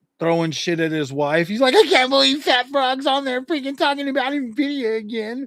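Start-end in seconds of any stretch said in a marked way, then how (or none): 1.8-5.5 mock fuming, pitched-up, pissed-off, fed-up rant. Imagining a man at his desk, the speaker acts him out: mock pissed-off rant. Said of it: "just being like pissed off and shit".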